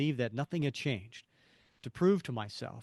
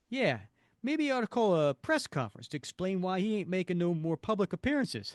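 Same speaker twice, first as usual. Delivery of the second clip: put-on dumb-guy New York accent, pitched up; 6 semitones higher than usual. Reading a character's reply aloud, in a stereotypical new york accent. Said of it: "stereotypical New York dumb guy's accent".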